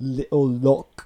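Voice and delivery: slow, loud mock British accent. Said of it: "like Megan".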